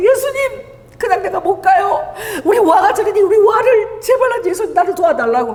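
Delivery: desperate, crying voice.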